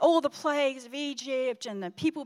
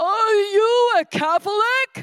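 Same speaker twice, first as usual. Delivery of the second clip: very loud, very slow, drawn-out booming bellow; 8 semitones higher, 11 dB louder than usual. Retelling how a priest questioned the speaker at communion, in the priest's loudest voice ever. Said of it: "in the loudest voice ever".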